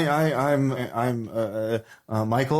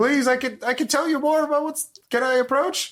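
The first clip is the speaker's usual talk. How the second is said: very high-pitched yell, as if from afar. Voicing a castaway who calls to the players from afar: yelling from a distance. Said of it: "person yells at you from a distance".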